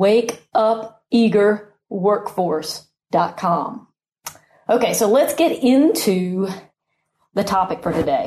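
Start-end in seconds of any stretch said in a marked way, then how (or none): 0.0-3.9 unhurried, slow, deliberate, each word kept apart. Podcast host repeating the website address for listeners, said slowly. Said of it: "so I'll say it kind of slow again".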